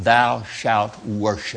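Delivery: slow, even, emphatic stress on thou shalt worship.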